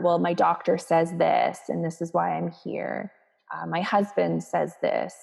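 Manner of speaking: plain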